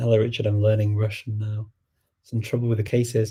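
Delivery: ordinary delivery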